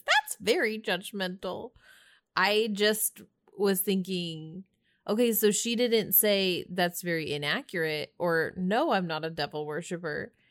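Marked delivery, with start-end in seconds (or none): 0.1-1.7 put-on little, high, squeaky girl mouse voice. Quoting the girl mouse character, squeaky girl mouse voice. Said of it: "the girl mouse gets the squeaky voice and says".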